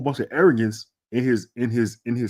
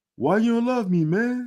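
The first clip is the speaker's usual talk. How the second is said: high, sad, plaintive begging tone; 11 semitones higher than usual. Retelling how a player looked at a teammate walking by: imitating a sad plea. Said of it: "Bill was looking at Trey walk by him like".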